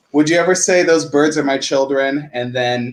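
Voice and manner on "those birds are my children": ordinary talk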